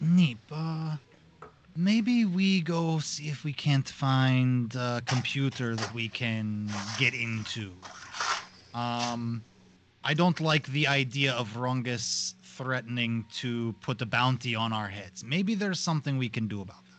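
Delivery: quiet, hushed, confidential aside. Going over to Neep in the scene, the character speaks in a hushed tone. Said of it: "kind of in a hushed tone go".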